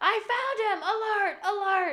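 put-on very high, very slow, drawn-out shout. Retelling a scene where the bully finds the boy, imitating the bully yelling. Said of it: "yelling because they're looking for this boy".

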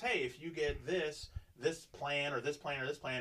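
ordinary delivery

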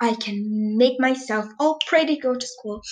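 plain

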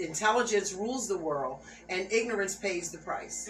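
usual speaking voice

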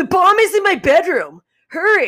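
swooping, very high-pitched, loud yell. Retelling answering the door at a party: retelling her own yell. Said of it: "I just yelled".

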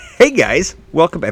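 speaking very loud. Opening the episode and greeting the listeners, speaking very loud. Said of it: "I'm speaking very loud tonight".

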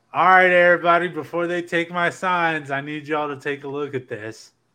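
mock yelling, loud and carrying. Retelling calling out to the crowd before security took the signs: retelling own yell. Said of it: "I yelled out".

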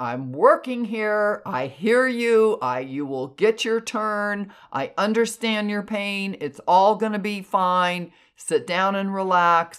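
put-on, really mad high scream, firm and commanding. Retelling what they screamed at an angry spirit, retelling own scream. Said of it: "I screamed at this entity".

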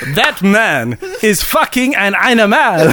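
put-on slow French Canadian accent, laughing through it. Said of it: "Is it supposed to be Quebecois?".

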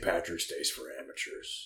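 put-on bitterness. Quoting the grandfather's usual saying, in a mock-bitter tone. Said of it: "would always like bitterly say like St".

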